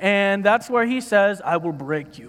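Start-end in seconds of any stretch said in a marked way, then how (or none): 1.4-2.3 put-on low, soft Russian accent. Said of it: "that's my best Russian accent".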